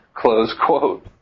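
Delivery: speaking with small chuckles of laughter. Finishing a quotation read aloud, chuckling while speaking. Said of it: "heard the chuckle [name]'s voice there".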